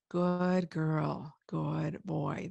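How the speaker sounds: very slow, low, smooth drawn-out legato. Saying goodnight to the dog at day's end: low, long legato voice. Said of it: "That's legato and it's lower".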